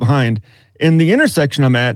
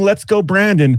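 put-on screaming man voice, higher pitch; 6 semitones higher than usual. Retelling an old man yelling from a car in traffic: imitating a man screaming. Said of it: "clapping and screaming".

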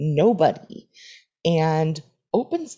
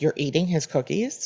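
put-on accusing, accusatory tone. Retelling what someone said on walking in, imitating an accusatory tone. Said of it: "the way he said it was like accusatory".

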